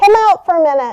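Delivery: shouting. Calling to someone downstairs behind a closed door: yelling. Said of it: "Sorry for yelling".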